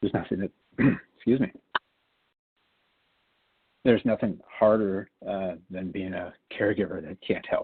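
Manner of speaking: overcome with emotion, struggling through the words. Speaking publicly about awaiting researchers' help, getting emotional. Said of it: "sorry, getting emotional".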